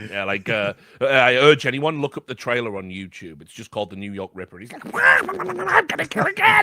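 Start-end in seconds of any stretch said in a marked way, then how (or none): 4.9-6.6 I'm said shrill and stretched out. Quoting a character from The New York Ripper trailer, in a Donald Duck voice. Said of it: "he talks in a Donald Duck voice".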